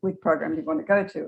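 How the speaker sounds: ordinary delivery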